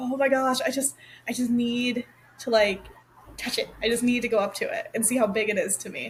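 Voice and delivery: ordinary delivery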